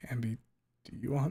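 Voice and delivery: breaking, cracking voice mid-line. Speaker addresses a child named Ambi, voice cracking. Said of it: "Fuck, voice crack".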